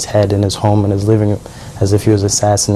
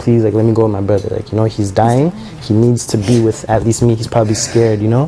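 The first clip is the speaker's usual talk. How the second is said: normal talking voice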